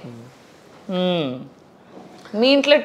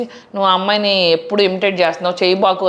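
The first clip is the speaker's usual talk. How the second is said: ordinary delivery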